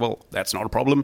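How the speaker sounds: very bad, butchered Australian accent. Retelling Murdoch's reply during a news discussion, bad Australian Murdoch impression. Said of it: "very bad Australian accent".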